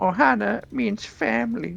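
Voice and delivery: very high, squeezed, rough raspy alien voice. Speaker shows off their impression: Stitch impression. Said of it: "And that's my Stitch impression".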